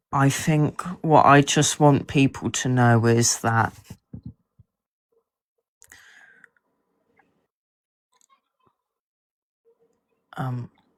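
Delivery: choked-up, swooping voice catching with emotion. An author, asked what people should take away, gets choked up. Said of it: "I'm getting a little emotional at the moment".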